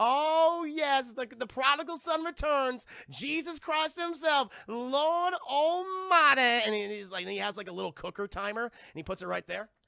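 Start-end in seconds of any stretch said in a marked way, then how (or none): 0.0-6.4 mocking, sneering, high-pitched, slow Southern accent. Retelling a film scene, quoting Lex Luthor addressing Superman, mocking southern accent. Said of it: "he puts on a southern accent all of a sudden because I think he's mocking him".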